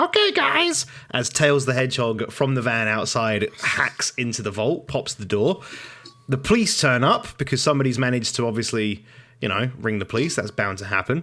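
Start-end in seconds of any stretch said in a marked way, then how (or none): 0.0-0.9 annoying, very high-pitched, squeaked-out voice. Describing a heist, a teammate calls in over the walkie-talkie: annoying high-pitched Tails voice. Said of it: "annoying, high-pitched, almost feminine voice".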